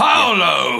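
very loud, hearty, jovial booming voice. Players try out a jovial voice for a character at a door: Brian Blessed booming voice. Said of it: "hearty, jovial, booming voice".

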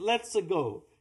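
put-on Italian accent. Listing what a game character says, in an Italian Mario voice. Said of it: "He goes".

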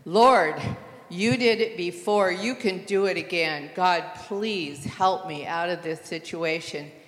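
put-on loud hollering. Retelling praying aloud in a stalled car in deep water: imitating her own hollering. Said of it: "I was hollering".

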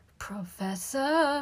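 high, fearful, frightened crying out. Neville calls to the professor as Pansy comes nearer, cried out. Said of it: "cried Neville".

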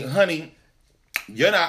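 ordinary talk, nothing marked

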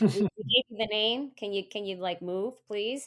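put-on aggressive voice. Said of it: "a little bit of an aggressive voice".

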